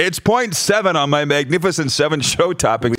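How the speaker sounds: ordinary talk, nothing marked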